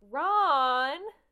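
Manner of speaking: loud calling voice.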